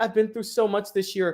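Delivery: acted, weepy, sobbing, tearful lament. Retelling a post-game press conference quote: imitating Angel Reese crying. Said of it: "starts crying and like".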